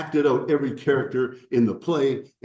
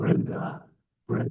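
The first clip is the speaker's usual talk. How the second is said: put-on demonic voice. Speaker retelling a classmate calling out from the back of the class in a demonic voice. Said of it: "some demonic voice from the back of the class would go".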